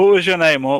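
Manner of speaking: shouted call, calling out across a distance. Jumping down and calling out to the orc: calling out. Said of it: "I just call out to the orc".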